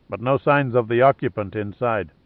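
ordinary delivery, nothing marked

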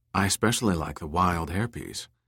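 ordinary delivery

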